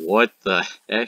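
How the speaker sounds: ordinary delivery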